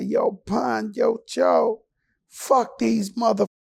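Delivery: little, high-pitched voice. Retelling a late-night standoff when a voice behind them speaks up, little Mike Tyson voice. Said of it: "we hear this little voice say".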